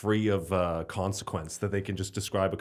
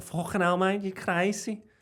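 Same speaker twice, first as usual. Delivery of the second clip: put-on Liverpool Scouse accent, pitched very high; 11 semitones higher than usual. Speaker chatting about football clips, imitating liverpool people. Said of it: "the Liverpool people are fun".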